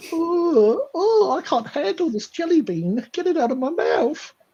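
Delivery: tiny, very high, silly squeaky put-on voice, long "oh". After tasting disgusting jelly beans, speaking in a silly little voice. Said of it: "Cody liked that little voice".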